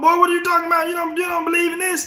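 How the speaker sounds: put-on voice pitched very high. Retelling a phone call in which his father questioned his beliefs: imitating his father's voice. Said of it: "That's my father's voice".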